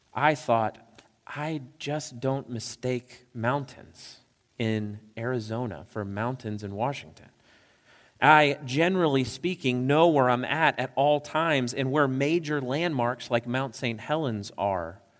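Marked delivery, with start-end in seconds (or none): none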